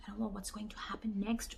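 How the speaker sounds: very soft, very quiet whisper under the breath. Showing how people talk in a movie theater: whispering. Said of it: "where do you see people whispering".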